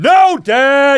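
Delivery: very loud, very high yell. Retelling the son's answer from upstairs: imitating a yelled reply. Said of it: "he yelled back".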